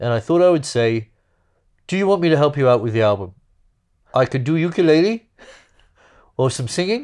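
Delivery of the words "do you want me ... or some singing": strong put-on Welsh accent, pitched up. Quoting their dad offering help with the album, in a welsh accent. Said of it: "It's actually way more Welsh than my dad".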